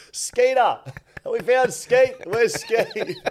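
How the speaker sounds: yelling into the microphone. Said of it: "just yelling Skeeter's name into the microphone".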